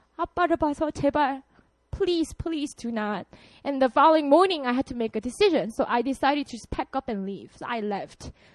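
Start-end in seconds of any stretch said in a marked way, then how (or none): 0.2-3.3 drawn-out, very slow begging plea. Retelling a father on his knees begging: imitating a father begging. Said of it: "he started begging me".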